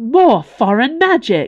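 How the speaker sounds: loud, high, disgusted exclaiming. As strange flowers spread through the doorways, someone exclaims: disgusted exclamation. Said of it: "exclaimed Mervadian in disgust".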